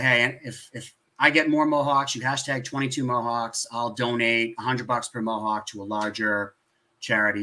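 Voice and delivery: ordinary talk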